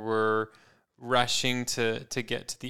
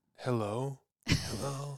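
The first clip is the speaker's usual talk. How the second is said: soft, sleepy, worn-out voice; 6 dB quieter than usual. Retelling a phone call to a date who finally answered, imitating a tired voice. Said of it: "like with a tired voice".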